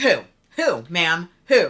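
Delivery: acted, very loud, indignant demanding tone. Retelling own reply to a woman with a message: retelling own indignant reply. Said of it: "so I get indignant a little bit".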